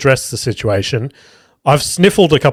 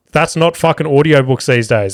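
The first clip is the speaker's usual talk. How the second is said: ordinary talk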